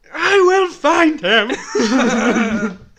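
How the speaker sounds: bellowed at full volume. Asked by the other speaker for his best one, [name] does a General Zod impression. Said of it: "Give us your best General Zod impression".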